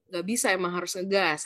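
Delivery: ordinary talk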